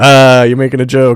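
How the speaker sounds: stilted, uncomfortable, very awkward delivery. Retelling a film scene with a farmhand giving directions: imitating an awkward reply. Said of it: "this very awkward".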